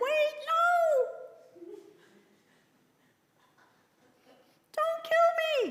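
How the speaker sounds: tiny, very high, squeaking piglet voice. Reading a story aloud, the piglet speaks as the man reaches for his knife: little squeaky voice. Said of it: "he heard a little squeaky voice said".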